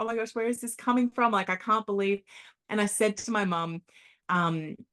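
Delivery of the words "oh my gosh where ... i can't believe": acted laughing and crying at once, high, stunned. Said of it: "I'm laughing and I'm crying at the same time".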